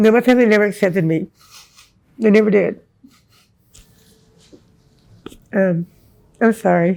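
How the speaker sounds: tearful speech, crying while talking. Answering an interviewer about being rejected by family, crying while talking. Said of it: "everybody's gonna see me crying".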